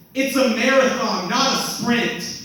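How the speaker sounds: loud, high shouting.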